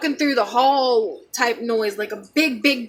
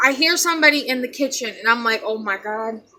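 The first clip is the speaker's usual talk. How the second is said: ordinary delivery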